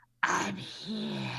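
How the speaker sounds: stage whisper. Describing how she would sound telepathically to the group, telepathic stage whisper. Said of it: "you're gonna hear this like".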